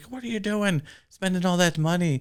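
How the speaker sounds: fake, clumsy, high-pitched Irish brogue. Retelling a film's plot, the speaker voices the husband's wife: bad Irish accent. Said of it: "sorry for the bad accent".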